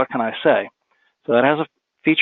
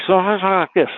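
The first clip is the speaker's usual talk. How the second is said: high-pitched mumbling, hard to make out; 7 semitones higher than usual. Speaker demonstrating dictation software, demonstrating mumbling. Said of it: "so if I mumble like that".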